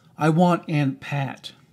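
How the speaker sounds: ordinary delivery, nothing marked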